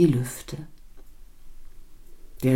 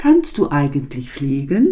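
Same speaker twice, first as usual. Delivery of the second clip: plain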